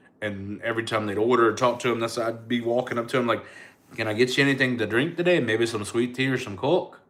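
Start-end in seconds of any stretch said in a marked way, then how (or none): 4.0-6.9 put-on Irish accent, Irish brogue. Retelling going to all her tables pretending to be Irish, in an Irish accent. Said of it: "with an Irish accent for the whole night".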